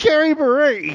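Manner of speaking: very high-pitched, prim motherly voice. Retelling her mother's reaction to a shocking object: imitating her mother.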